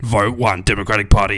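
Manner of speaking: loud, low, dramatic campaign ad voice. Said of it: "you gotta do the dramatic voice".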